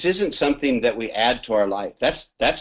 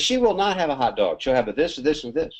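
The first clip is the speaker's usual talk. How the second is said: furious, angry fatherly outburst; 4 semitones higher than usual. Telling a story, the speaker acts out a father blowing up at the waitress: mock angry outburst. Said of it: "then her dad blows up".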